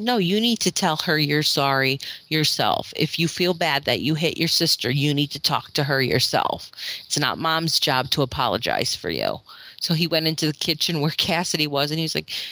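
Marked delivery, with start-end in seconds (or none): none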